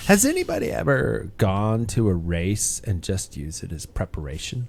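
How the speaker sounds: creaky voice. Speaker asking the others a question, in vocal fry. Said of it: "I'm gonna have to talk about vocal fry".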